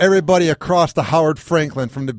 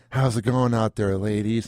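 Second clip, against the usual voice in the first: smooth, low late-night jazz radio host voice; 4 semitones lower, 5 dB quieter than usual. Ryan tells the other speaker what his voice reminds him of: smooth jazz-channel voice. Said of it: "smooth like jazz channel at".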